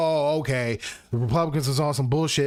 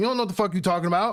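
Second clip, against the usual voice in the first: acted-out, put-on ranting and yelling; 5 semitones higher than usual. Showing what gets yelled at influencers on screen: imitating yelling at the screen. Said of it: "That's why I'm yelling at the screen".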